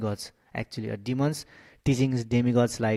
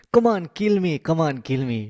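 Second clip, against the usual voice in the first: mock daring, raised, high-pitched goading taunt; 5 semitones higher, 5 dB louder than usual. Retelling how Vritrasura urged Indra to kill him: imitating Vritrasura taunting Indra on. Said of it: "Britasura is actually motivating Indra".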